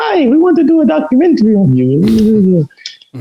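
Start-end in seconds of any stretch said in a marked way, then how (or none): 0.0-2.0 squeaky, very high-pitched voice. Speaker recalls a documentary director approaching him in the gym; squeaky Andre Horman impression. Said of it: "He got like a squeaky voice".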